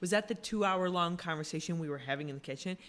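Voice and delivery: normal talking voice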